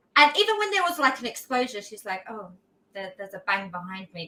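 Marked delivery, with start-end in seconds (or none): 2.3-4.3 low, level, deadpan, unexcited monotone. Imitating Lara Croft reacting to an explosion behind her: monotone Lara Croft voice. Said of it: "speaks quite monotone".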